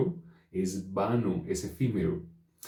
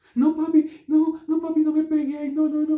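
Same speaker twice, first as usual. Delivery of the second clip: put-on very high, loud, childish little-kid pleading; 8 dB louder than usual. Showing how a child changes its voice to avoid punishment: imitating a pleading child. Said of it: "Cambia la voz".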